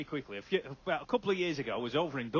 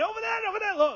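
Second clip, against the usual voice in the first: very high, shrill, urgent shouting; 6 dB louder than usual. Retelling pointing and shouting across the road: retelling shouting. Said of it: "Nobody knew what I was shouting about".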